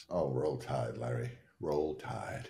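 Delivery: deep, very soft, badly done fake Southern accent. A host opening an episode of the show, in an atrocious Southern accent. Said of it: "That Southern accent is just atrocious".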